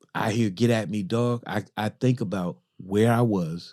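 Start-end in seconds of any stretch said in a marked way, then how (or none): none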